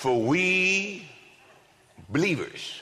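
spelled out very slowly, "we" drawn out. Reading 2 Corinthians aloud to the audience, said really slowly. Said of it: "I'm going to say that real slow".

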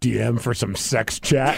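low, sexy, sultry delivery. Asked to read a picture's caption aloud, in a sultry voice. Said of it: "Use your sultry voice".

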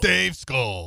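intense FM radio DJ announcing delivery. Trying out how to deliver a line, in an FM DJ voice. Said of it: "Like an FM DJ".

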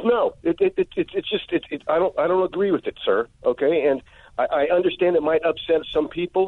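high-pitched, angry rant. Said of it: "So why are you so angry?".

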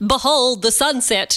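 ordinary talk, nothing marked

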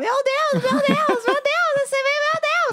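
very high, shrill, repeated shouting cries. Retelling how the one lying on her lap began yelling during a tv show, imitating someone shouting. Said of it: "ele começou a gritar".

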